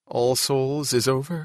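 ordinary delivery

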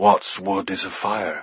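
speaking in a hush. At the tower parapets, a knight tells the others what he sees, in a hushed voice. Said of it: "he said in a hushed voice".

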